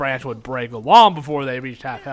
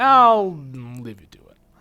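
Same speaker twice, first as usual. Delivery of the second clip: heavily sarcastic, very drawn-out, slow, sing-song tone. Telling someone you'll leave them to it, in a sarcastic tone. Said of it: "it's got that sort of sarcastic tone".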